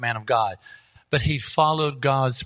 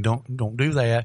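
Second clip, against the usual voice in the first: put-on whisper; 2 semitones lower than usual. Retelling a business idea and god's warning: imitating god whispering. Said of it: "He's whispering".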